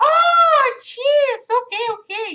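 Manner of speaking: put-on very high, booming, drawn-out Spanish accent. Retelling a customer at his store asking him questions, imitating a Spanish accent. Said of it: "but they have that Spanish accent".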